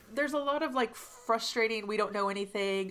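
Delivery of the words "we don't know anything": ordinary delivery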